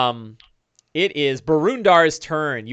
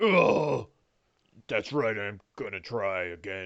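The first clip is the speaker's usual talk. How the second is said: deep, big, brutish ogre voice; 6 semitones lower, 9 dB quieter than usual. Voicing an ogre pulling its club from the ground: ogre voice. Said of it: "He's like".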